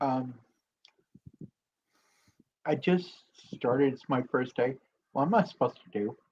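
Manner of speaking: quiet, soft, gentle voice. Retelling asking the man stirring a pot on your first day, speaking quietly. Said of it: "And I'll say quietly".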